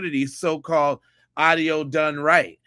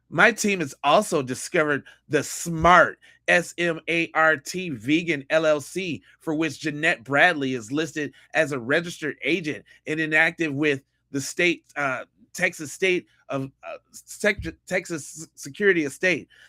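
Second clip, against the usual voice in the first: plain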